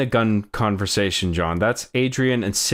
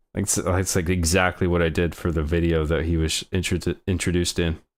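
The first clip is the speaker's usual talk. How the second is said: usual speaking voice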